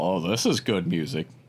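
acted-out, low, sarcastic tone. Retelling a woman's comment on the album he put on, mock-sarcastic comment. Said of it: "she makes her sarcastic comment".

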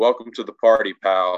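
ordinary talk

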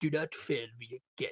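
very deep, very soft, menacing villain voice. Describing how a character switches voices with Dooku, the speaker imitates his villain voice. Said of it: "he switches his voices".

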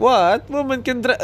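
high-pitched put-on Arabic accent. Imitating a man surprised to see a woman driving, imitating an Arabic accent. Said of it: "Like Arabic accent".

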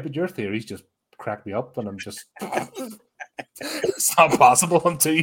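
swooping talk breaking into laughter. Reacting to another speaker's funny theories, laughing while talking. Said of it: "I'm still laughing".

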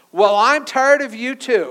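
very loud, high voice. Telling a story about a husband who couldn't hear his wife: retelling a loud reply. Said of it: "the husband replied rather loudly".

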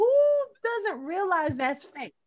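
high, incredulous scoff. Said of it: "I was like".

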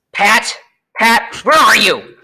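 angrily calling out. Narrator reads the rabbit calling for pat, in an angry voice. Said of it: "Next came an angry voice".

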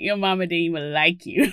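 mock nasty sleepy voice. Acting out an insult said when short of sleep: imitating own vile sleepy self. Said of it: "I'm a vile human if I don't get my sleep".

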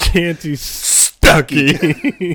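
fake angry delivery. Saying a funny player name for the other speaker: mock angry tone. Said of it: "say it in an angry tone".

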